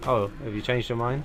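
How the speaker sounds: ordinary talk, nothing marked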